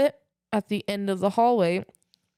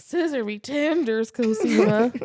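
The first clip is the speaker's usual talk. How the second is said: mock, very slow, sloshed drunken drawl; 3 semitones higher than usual. Retelling own words while really drunk on Saint Patrick's Day: imitating own drunk speech. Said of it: "I was like, really out".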